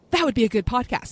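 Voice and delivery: put-on casual, offhand tone in a British accent. Retelling what Mark said about a podcast idea: British accent imitating Mark. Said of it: "in his British accent".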